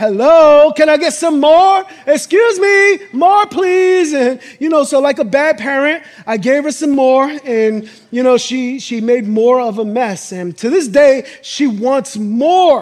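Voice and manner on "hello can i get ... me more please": put-on high, loud, eager little-girl pleading voice. Describing a photo of his daughter after an Oreo: imitating his daughter asking for more. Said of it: "you notice she's like".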